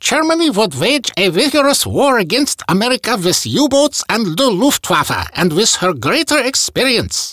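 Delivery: bad, heavily applied German accent, very high. Recounting history, quoting Hitler's boast to Matsuoka in a bad German accent as Hitler. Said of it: "I gotta use a bad German accent when I'm quoting Hitler".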